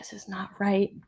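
put-on whisper. Retelling a complaint to a sister about a wrong order: imitating a whisper. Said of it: "whispered to my sister".

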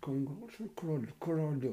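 slow, hushed mutter through clenched teeth, scolding tone. Imitating how mothers scolded between their teeth: muttered through clenched teeth. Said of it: "Quando as mães falavam entre os dentes".

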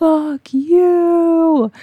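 play-acted very high wild-animal scream, "you" drawn out. Retelling screaming in the middle of the circle: retelling a scream. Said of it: "was screaming".

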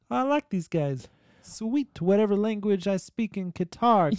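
put-on New York accent. Imagining one guy reacting to targeted ads, the speaker voices him in a new york accent. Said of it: "doing a New York accent".

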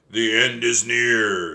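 put-on very loud, slow, rasping old-woman voice. Reading a story, the narrator voices a strange woman speaking to Jack and Annie, raspy voice. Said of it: "she said in a graspy voice".

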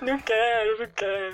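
mock crying, clingy tearful whine. Recalling having to give away childhood toys, imitating childhood crying. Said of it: "chorando, apegado todo".

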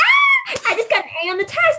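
put-on, very high, swooping, excited shriek of joy. Describing a scene where she comes out of class, imitating someone screaming. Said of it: "she's screaming".

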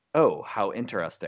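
ordinary delivery

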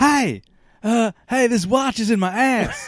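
slow, deliberate voice. Showing the other speaker voices, doing Christopher Walken voice. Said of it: "I'm doing Christopher Walken".

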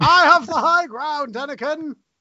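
booming, very slow and deliberate voice. Answering a question about the voice, keeping up the Obi-Wan voice. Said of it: "are you just gonna say it like Obi-Wan the entire time".

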